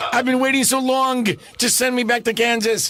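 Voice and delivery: high-pitched put-on New York accent. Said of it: "she was this other thing".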